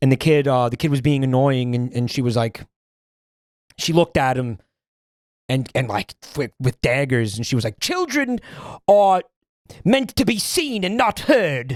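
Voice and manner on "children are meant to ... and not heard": put-on very high, slow old-timey voice with affected old-fashioned diction. Retelling what a woman said to an annoying kid; imitating an old-timey voice. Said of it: "she had like a like an old timey voice".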